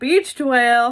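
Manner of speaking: booming shout at full volume. Retelling rolling over on land in a mermaid tail: retelling own yell. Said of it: "I rolled over and I yelled".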